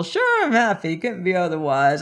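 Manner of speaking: put-on tipsy and cheerful. A character talks on the telephone, drunk and merry. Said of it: "I'm drunk and merry".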